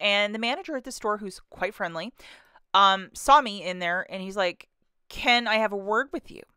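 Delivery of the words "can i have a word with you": grave, stern, serious, no-nonsense tone. Retelling what the store manager asked: imitating a stern manager. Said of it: "Very stern fashion that he said that".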